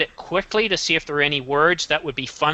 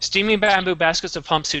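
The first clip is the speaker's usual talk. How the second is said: very fast, rushed, rattled-off reading. Rereading the same sentence, this time really fast: very fast reading. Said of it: "Let me read it again really fast".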